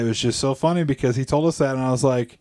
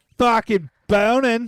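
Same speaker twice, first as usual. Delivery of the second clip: very high-pitched put-on Australian accent; 10 semitones higher than usual. Trying to repeat a phrase in an australian accent. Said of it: "how would you say that in an Australian accent?".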